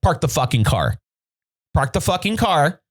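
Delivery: mock-fuming, furious, acted-out angry delivery. Retelling ordering a man to stop and park, retelling an angry command. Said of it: "I was fucking fuming".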